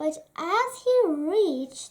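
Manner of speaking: plain reading voice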